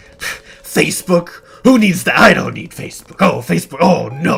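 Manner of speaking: loud, high-pitched scoffing voice.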